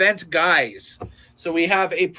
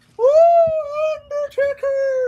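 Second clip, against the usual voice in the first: pallbearer voice, very high, long drawn-out ooh. Summoning the Undertaker while holding up an imaginary urn, pallbearer voice. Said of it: "put on our best pallbearer voices".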